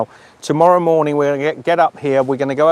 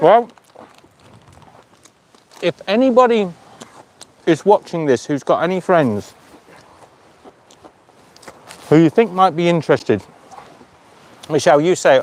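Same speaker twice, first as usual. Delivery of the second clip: speaking while chewing, mouth full of food; 2 semitones higher than usual. Speaking to viewers while eating chips; talking with a mouthful of chips. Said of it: "I've got a mouthful of chips".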